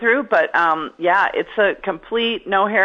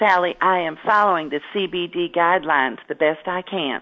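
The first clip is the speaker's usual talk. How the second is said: sweet, slow, unhurried little southern drawl. Quoting her mother's reply about wearing her mask: sweet little southern accent. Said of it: "in her sweet little southern accent".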